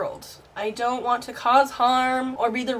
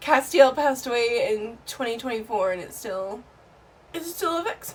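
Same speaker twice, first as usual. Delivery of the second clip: tearful speech, weeping through the words. Speaking to viewers about a lost soulmate, crying. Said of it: "I can't stop crying".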